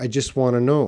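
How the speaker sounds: quick native-sounding speech, want to reduced to wanna. Pronunciation lesson on how fast native speakers reduce words: fast, 'want to' reduced to 'wanna'. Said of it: "if they're speaking really fast, they might say".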